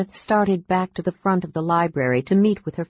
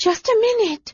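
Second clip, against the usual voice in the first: breathless, very high-pitched call. Lilith calls back to Marcus while kissing Brian; called breathlessly. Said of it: "she called breathlessly".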